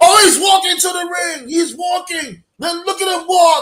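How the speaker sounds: fake ringside commentator yelling. Mocking a commentator who yells at everything in the ring, imitating his excited yelling. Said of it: "Why are you yelling?".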